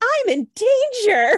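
put-on very high, loud little cartoon boy voice. Recalling the first thing that came to mind, in The Simpsons little kid voice. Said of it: "that little kid in The Simpsons, that voice".

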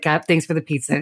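ordinary delivery

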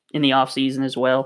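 ordinary delivery

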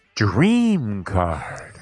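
sensual female announcer voice, loud and swooping. Describing a casino game machine's announcer: imitating a sensual female voice. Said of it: "kind of sensual female voice comes on and goes".

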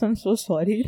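talking around half-chewed food, mouth full. Asked a question mid-episode, she apologizes while talking with her mouth full. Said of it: "I kind of have food in my mouth".

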